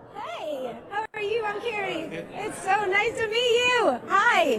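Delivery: high, forced, gushing fake enthusiasm. Welcoming a band at an interview: fake enthusiasm. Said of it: "The fake fucking enthusiasm".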